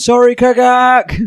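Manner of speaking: very high, sudden yelled shout. Casting a fireball that hits an ally, shouting an apology. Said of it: "I'm shouting".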